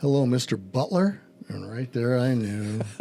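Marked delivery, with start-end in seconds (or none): 0.0-1.2 put-on tentative, hesitant voice. Retelling how a phone caller nervously greeted him: imitating a tentative caller. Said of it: "this tentative voice goes".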